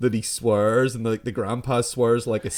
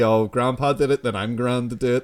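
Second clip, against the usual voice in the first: ordinary talk, nothing marked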